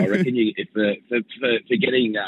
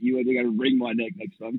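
ordinary talk

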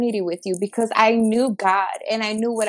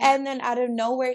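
normal talking voice

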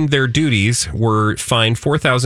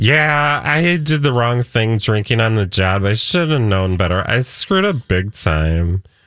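put-on sloppy, slurring garden-variety drunk voice. Unable to do an Australian accent, speaker does a drunk voice. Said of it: "I just have to do my garden variety drunk".

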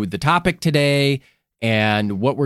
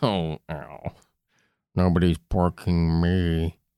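cartoon dog voice, much lower and quieter; 8 semitones lower, 6 dB quieter than usual. Joking with a co-host about poor Andy, doing Droopy Dog voice. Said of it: "That's droopy dog for sure".

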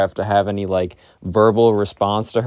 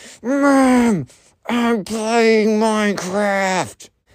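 very high, very slow, faint, muffled voice; 12 semitones higher than usual. Retelling a child's reply heard through a door: imitating a faint muffled voice. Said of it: "this very faint, muffled".

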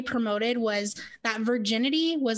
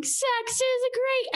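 put-on crowd of teenagers yelling together, very high; 13 semitones higher than usual. Retelling how middle and high schoolers yelled a phrase: imitating teens yelling. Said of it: "middle school and high schoolers yelling".

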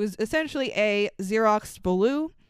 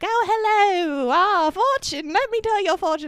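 put-on very high girlish voice; 9 semitones higher, 4 dB louder than usual. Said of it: "he puts on like a girly voice".

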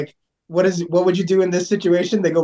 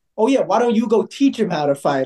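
put-on condescending voice; 2 semitones higher than usual. Retelling another commenter's reply during a comment-section fight, mock-condescending. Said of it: "like condescendingly".

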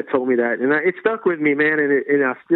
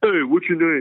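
put-on low voice; 2 semitones higher than usual. Recounting a drum teacher's greeting on his late first day, imitating the teacher's low voice. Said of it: "he had that low voice".

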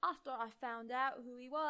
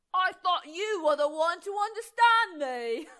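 very loud, high, bad put-on British accent; 5 semitones higher, 12 dB louder than usual. Reading a character's line to a friend who doubts his plan, bad fake British accent. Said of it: "Why do you sound like Draco".

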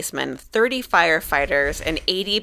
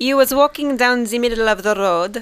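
bad French accent, pitched up, nearly Austrian; 5 semitones higher, 4 dB louder than usual. Retelling a listener's story about meeting a naked man, in a bad French accent. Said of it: "Sounds a little Austrian".

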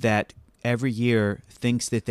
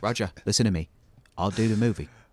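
put-on British actor voice; 2 semitones lower than usual. Imitating Michael Caine talking to his agent: Michael Caine impression. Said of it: "quote Michael Caine".

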